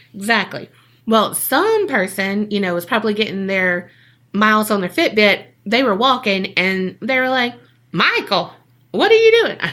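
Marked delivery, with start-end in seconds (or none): 7.9-9.5 fake high-pitched rural country accent. Retelling what a passerby called out to michael, in a put-on country accent. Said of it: "Why do they have a country accent".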